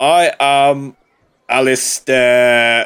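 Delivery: loud, booming, grand, self-important pompous duke voice. A player poses as a big scary duke introducing themselves, booming voice as Alistair. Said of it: "I will be your let's say manservant, and you will be some kind of large, scary duke. / You're just a very big, scary duke. / And she kind of jumps on the spot at this booming voice that's come from be".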